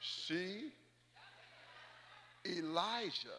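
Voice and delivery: very slow, drawn-out delivery. Repeating a point because the listeners missed it again, very slow. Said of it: "Let me say it slow".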